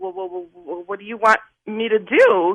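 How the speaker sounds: put-on, acted-out stuttering. Retelling looking up at a man and answering him: imitating own stutter. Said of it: "I'm stuttering again".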